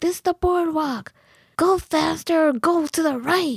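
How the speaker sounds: high, acted yell. Retelling what bike riders on the boardwalk yelled: imitating cyclists yelling. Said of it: "they would yell at me and say".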